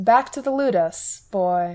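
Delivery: put-on slurred grunt, sounding drunk. Hector, one of the particularly cruel, orders the boy back: grunted, slurred with drink. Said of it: "grunted, his voice slurry with drink".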